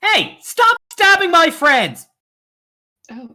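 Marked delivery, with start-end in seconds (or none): 0.0-2.1 shrill, swooping, loud far-off yell. A game master voices an unseen figure far down a hallway: distant shout. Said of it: "you hear a voice shouts like".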